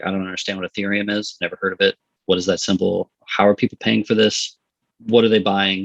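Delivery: ordinary talk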